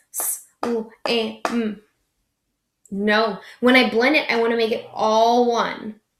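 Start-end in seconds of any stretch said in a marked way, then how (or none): 0.1-1.8 choppy, broken, separated sounds, quieter. A teacher shows the class the wrong way to blend a word, with choppy separated sounds. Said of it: "Did I sound like this?".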